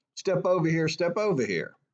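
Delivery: put-on shouting. Retelling what a police officer called out his window: imitating a shout. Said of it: "he shouts out his window".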